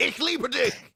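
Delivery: very high, shrill, harsh, aggressive German. Showing how a German saying I love you sounds: aggressive German. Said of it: "sounds as if they're just about to punch you in the face".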